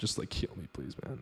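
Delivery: whispered, desperate begging tone. Speaker recalls begging God during a hard time, retelling desperate begging. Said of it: "I was like begging God".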